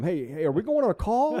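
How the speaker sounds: very high, very loud, shrill holler. Retelling yelling into the truck intercom: imitating own past yelling. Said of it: "I'm yelling into the intercom".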